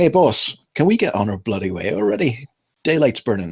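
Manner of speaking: impatient, fed-up shout. Voicing a worker calling across a hall to the boss: impatient shout. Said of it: "shouts over to the gnome".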